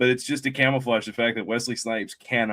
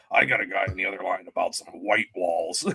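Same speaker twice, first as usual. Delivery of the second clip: low, super scratchy, heavy raspy voice; 4 semitones lower than usual. Quoting a guy from a show, in a super scratchy voice. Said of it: "he has that super scratchy voice".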